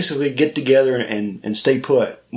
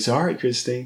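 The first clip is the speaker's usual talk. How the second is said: put-on sarcastic tone, quieter; 4 dB quieter than usual. Retelling a movie scene, quoting Dennis: imitating Dennis speaking sarcastically. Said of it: "Dennis says that very sarcastically".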